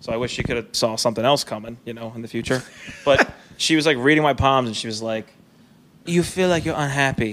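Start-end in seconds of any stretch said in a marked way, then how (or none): 6.0-7.3 put-on, fake Ukrainian accent. Retelling what a palm reader said to her, fake Ukrainian accent. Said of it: "she was definitely faking like a Ukrainian accent".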